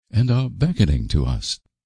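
ordinary delivery, nothing marked

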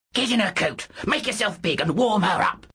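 high, snarled voice. A wolverine-form daemon ordering a girl's whimpering daemon, snarling. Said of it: "he snarled".

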